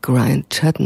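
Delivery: ordinary delivery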